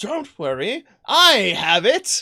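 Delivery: loud, slow, drawn-out gurgling spirit voice. Narrating the story as the spirit materializes and speaks, in a gurgling voice. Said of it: "in a gurgling voice says".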